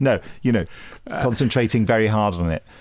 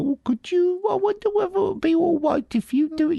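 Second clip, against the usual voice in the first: very high, put-on babyish voice. Imitating people who say unpopular things, in a put-on baby voice. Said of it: "they put on a baby voice. They go".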